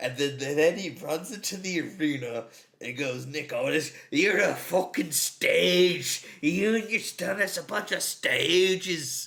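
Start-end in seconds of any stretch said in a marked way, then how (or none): 3.3-9.3 put-on loud, bellowing voice in thick Scottish accent. Retelling a wrestling segment, quoting Drew McIntyre: imitating Drew McIntyre's thick Scottish accent. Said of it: "In his thick Scottish accent".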